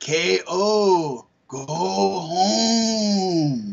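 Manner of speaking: very slow, drawn-out alien voice, "home" stretched out. Saying a wrestler's name and telling him to go home: E.T. impression. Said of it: "that's my best E T impression".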